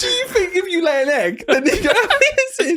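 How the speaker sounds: high-pitched, laughing disbelief.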